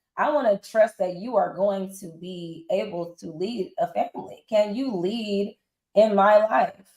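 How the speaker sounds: ordinary talk, nothing marked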